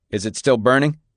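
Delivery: ordinary delivery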